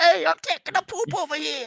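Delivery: high-pitched put-on goblin creature voice. A player plans to pose as a goblin at the cave entrance, using a goblin voice. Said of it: "I'll just make a goblin voice".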